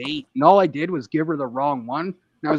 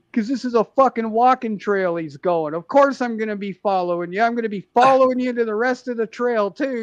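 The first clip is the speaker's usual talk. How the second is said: put-on angry rant, higher and faster; 7 semitones higher than usual. Retelling how a guy on a walking trail yelled at a woman filming him, retelling a guy losing it. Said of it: "just losing it on her".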